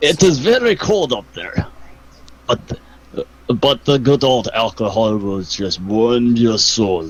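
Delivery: low-pitched, put-on Russian accent. Asked if he's from the northern countries, answering in a put-on Russian accent. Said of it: "this Russian thing".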